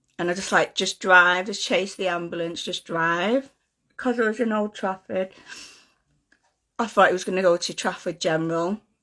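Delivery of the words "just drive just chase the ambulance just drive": plain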